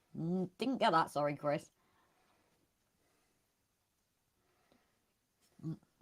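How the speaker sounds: speaking while eating, mid-bite. Host apologizing to a listener for missing something, talking while eating. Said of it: "eating A S M R".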